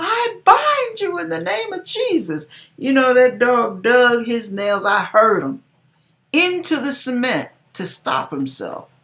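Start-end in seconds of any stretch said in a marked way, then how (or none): 0.0-2.5 very high-pitched, loud hollering. Alone in the dark, hearing a dog coming, retelling a holler. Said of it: "And I hollered".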